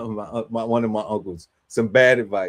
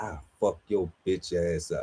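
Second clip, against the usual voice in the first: menacing, hushed half-whisper under the breath; 4 semitones lower, 7 dB quieter than usual. Recounting what he kept half-whispering to a yelling man: retelling a half-whispered threat. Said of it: "and I was whispering".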